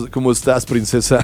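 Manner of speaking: low, soft, flirty radio voice. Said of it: "siento que como que mandas".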